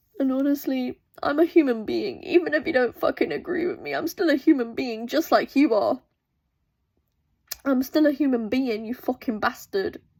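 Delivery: tearful crying. A speaker recording a video while openly crying. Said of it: "but I am crying right now".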